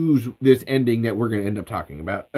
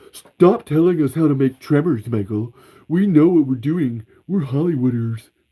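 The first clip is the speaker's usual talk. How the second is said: dismissive put-on voice; 2 semitones higher than usual. Acting out the studio telling Michael to stop: Steve voice. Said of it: "I'm using a Steve voice".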